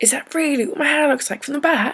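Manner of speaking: put-on high, slightly loud British accent. Recalling her first British-accent line, doing a British accent as Hermione Granger. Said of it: "tried to say with a British accent".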